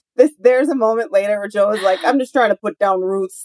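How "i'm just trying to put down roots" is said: heavily exaggerated, thick Midwestern accent. Quoting a line from Joe on the show: imitating Joe's Midwestern accent. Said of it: "we have gone all in on the accent".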